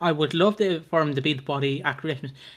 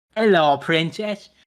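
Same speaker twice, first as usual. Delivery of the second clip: villainous, evil, put-on character voice; 4 dB louder than usual. Retelling how a character came out of the shadow: imitating Den Watts. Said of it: "came out of the shadow and was like".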